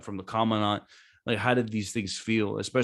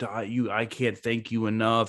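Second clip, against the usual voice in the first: mock bawling, put-on crying, slower. Retelling a mother's reaction to news about her son, imitating a mother crying. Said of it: "the mom starts bawling, crying".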